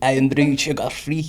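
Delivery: put-on Glaswegian Scottish accent. Asked to try an accent, the speaker attempts a Glaswegian accent. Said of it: "You sound like a wee Glaswegian".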